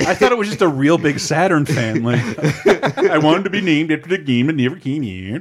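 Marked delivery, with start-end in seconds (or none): 2.0-5.4 best-effort put-on Norwegian accent. Joking about a big Saturn fan who wanted the game's name: Norwegian accent. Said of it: "This is my best Norwegian accent".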